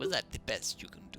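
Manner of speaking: voice of a vampire nobleman. Watching a game, imagining the reply after a lightsaber deflect, in a Count Dracula voice. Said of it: "why does he sound like Count Dracula?".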